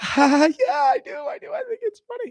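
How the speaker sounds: play-acted very high, frightened, nervous laugh. Retelling the reply to "you think it's funny": imitating own scared laugh. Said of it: "A scared laugh".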